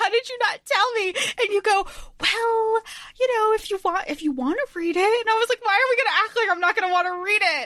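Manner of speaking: squealing, near-screaming excitement.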